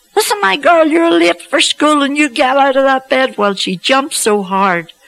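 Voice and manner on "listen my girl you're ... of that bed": very high, shrill scream at full voice. Retelling waking a girl dancing in bed, late for school: retelling a scream. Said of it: "I screamed at the top of my voice".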